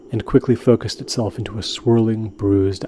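ordinary delivery

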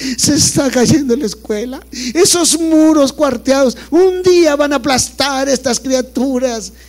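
high, slow, overdramatic pleading in a dramatic nun voice.

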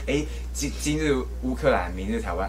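ordinary talk

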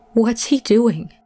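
shaky, trembling, quavering voice. A friend in the car asks the driver about the man in the truck, in a shaky voice. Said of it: "in a shaky voice".

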